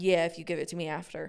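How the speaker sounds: ordinary talk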